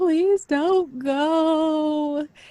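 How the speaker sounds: acted-out very high sobbing, crying, stretched out. Recalling being carried through an airport as he left, imitating sobbing. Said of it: "I was just sobbing like".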